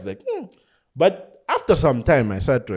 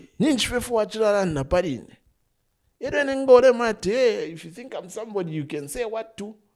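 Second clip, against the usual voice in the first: put-on angry ranting, higher; 10 semitones higher than usual. Retelling a phone call in which a girl insults him: imitating an angry tirade of insults. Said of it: "she just goes into this whole tirade of insults".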